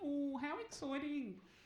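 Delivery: acted, fake, put-on excited enthusiasm. Retelling the receptionist's reply when she arrives for a cancer check, mimicking feigned excitement. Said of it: "feigning her excitement".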